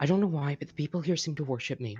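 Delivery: quiet whisper under the breath. Voicing a character who pulls Fifi close: whispering under breath. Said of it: "whisper under her breath".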